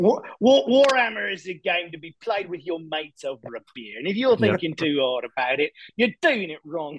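full put-on British accent. Discussing the Games Workshop tournament scene, the speaker quips in a British accent. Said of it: "I'm sure it was a spot on British accent".

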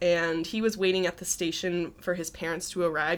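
ordinary talk

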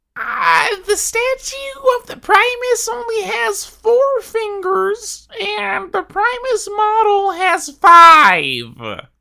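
very high, very slow, swooping sing-song complaining. Bringing up complaints about the Primus: Wowhead commenter voice. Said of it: "my best Wowhead commenter voice".

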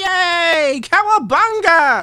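put-on very high, very loud whoop, "yay" drawn out. Describing a man in a movie as the logo appears, retelling a jubilant exclamation. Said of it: "exclaims like jubilantly".

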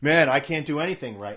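ordinary talk

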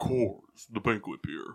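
deep voice dropped right down. Repeating the slogan on request, now in a deeper voice. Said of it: "Can you do that again, but with a deeper voice?".

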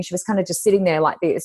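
ordinary talk, nothing marked

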